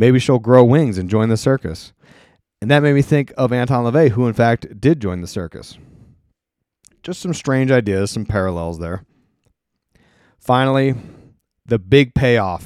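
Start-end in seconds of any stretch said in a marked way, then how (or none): none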